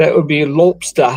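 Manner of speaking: put-on English accent. Answering quiz questions as asked to, in an English accent. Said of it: "you will use your English accent".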